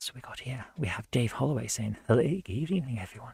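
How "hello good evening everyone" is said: put-on posh, best-manners telephone voice. Reading someone's message aloud, the speaker slips into a telephone voice. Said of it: "Why have I gone for my telephone voice?".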